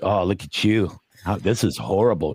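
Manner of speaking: put-on, mocking, hateful self-critical inner voice. Comedian recalling bombing on stage, imitating a hateful inner voice. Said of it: "we have this inner voice that that hates us".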